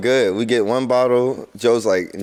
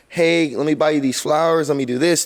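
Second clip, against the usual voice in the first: mock sweet, kind tone, higher pitch; 3 semitones higher than usual. Imitating a guy before he gets drunk: imitating a sweet, kind guy. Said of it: "they go from being sweet and kind".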